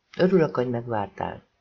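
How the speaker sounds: plain reading voice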